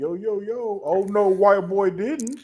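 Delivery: very slow, drawn-out, loud, high caricature voice, mocking. Joking about a tag team's racial stereotypes, imitating Crime Time's stereotyped voices. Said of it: "every fucking racial stereotype".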